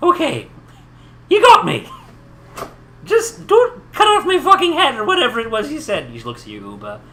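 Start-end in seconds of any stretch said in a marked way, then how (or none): 0.0-6.1 put-on very high, very loud, shrill old-woman voice. Voicing a captured old woman who gives up: voicing an old granny. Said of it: "She's like".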